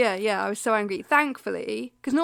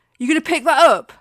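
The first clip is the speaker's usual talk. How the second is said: loud, mock rude, confrontational, barked delivery; 5 semitones higher, 10 dB louder than usual. Retelling what a man who whistled at her said, imitating a rude demand. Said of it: "Like that".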